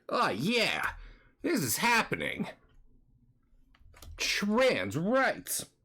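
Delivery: put-on cartoon hedgehog voice. Commentating on a game, attempting the Sonic voice. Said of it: "I can't do much of the Sonic voice".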